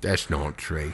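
attempted Australian accent that misses. Attempting an Australian line but landing in a Michael Caine voice. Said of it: "That was Michael Caine".

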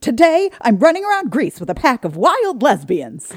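shrill, loud, high-pitched, swooping voice. Reading out a meme whose picture is Billy Eichner: Billy Eichner voice. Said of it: "my Billy Eichner voice".

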